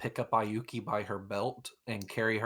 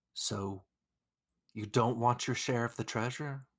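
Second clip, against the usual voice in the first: whispered in a hushed way. A player's character leans into a sleeping companion's ear: whispering. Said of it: "I lean into her ear and I whisper".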